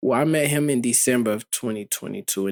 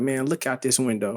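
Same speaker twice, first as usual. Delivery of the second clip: normal talking voice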